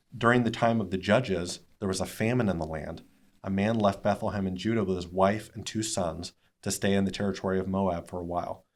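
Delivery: ordinary talk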